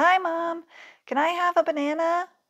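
high-pitched, loud yelling. Ivy calls to her mom, who is on the phone somewhere in the house, yelling loudly. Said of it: "she yelled loudly".

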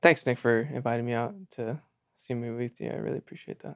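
quiet whispering. Acting a scene watching a movie in a car, whispering. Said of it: "why are you whispering like that?".

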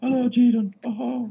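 mock Chinese accent. About to duel Banner, the speaker shows how he talks: Banner impression. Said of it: "He talks like this".

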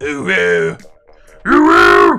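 rough growling voice. Playing with the word oo from the oo express: growly voice. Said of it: "I can say OO in a growly voice".

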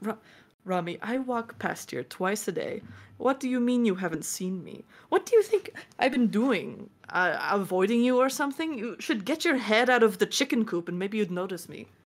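high, flustered, overwhelmed, fed-up and exasperated. Playing a character overwhelmed by questions, replying: overwhelmed and exasperated. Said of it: "Mateo's a little overwhelmed by all this questioning".

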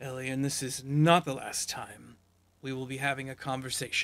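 menacing, threatening villainous voice. Voicing a fleeing villain who warns Elian, glaring villain threat. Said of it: "He glares daggers at".

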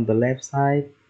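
ordinary talk

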